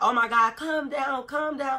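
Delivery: mock frantic, panicked, pleading voice. Retelling a cousin in the back seat: imitating a panicking cousin. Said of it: "my cousin's in the back seat panicking".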